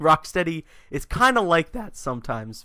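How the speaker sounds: voice breaking partway through the phrase. Mid-sentence while talking to listeners, voice cracks. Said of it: "Voice crack".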